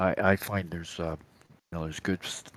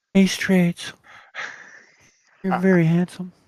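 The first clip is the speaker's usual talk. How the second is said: shrill, very loud, high put-on female voice; 13 semitones higher, 10 dB louder than usual. Speaker pretends to be a woman, in a fake woman's voice. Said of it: "Like I fake I'm a woman".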